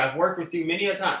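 ordinary talk

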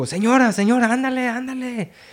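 put-on very high-pitched, angry, impatient yelling. Describing what you hear at the raft, imitating the man yelling at the people. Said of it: "You hear the dude yelling at the people".

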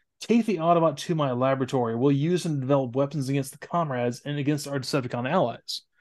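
ordinary talk

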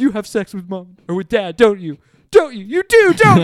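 very loud, rising, frantic, accusing outburst. Retelling a film scene where a daughter accuses her mom: imitating someone freaking out. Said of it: "the daughter's just freaking out".

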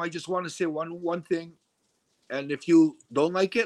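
usual speaking voice

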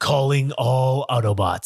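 bad, unconvincing, half-hearted movie-hero voice. Quoting the line from every Transformers movie: weak Optimus Prime impression. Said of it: "I can't do a very good Optimus Prime".

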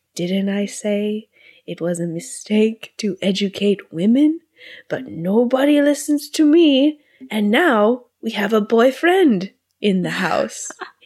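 grumpy father voice with a Greek accent.

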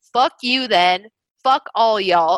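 normal talking voice

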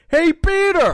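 very high, loud, belted cartoon voice. Doing an impression after being asked to go on: Joe Swanson voice. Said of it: "I can do a good Joe Swanson".

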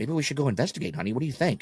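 curious, high, soft voice. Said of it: "And he's like".

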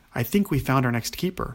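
ordinary delivery

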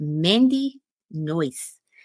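name drawn out slowly, carefully and deliberately. Giving someone's girlfriend's name, saying the name slowly. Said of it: "see how I'm saying it slow?".

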